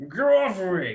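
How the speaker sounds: dragged-out, high, loud words around a mouthful. Voicing a thief struggling while chewing parchment: chewing while talking. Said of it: "he's just chewing on this".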